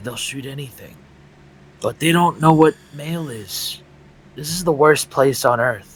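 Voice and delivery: hushed, whispered voice. In a scene, whispering to another character because it's dangerous in there. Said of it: "I'm gonna whisper to him".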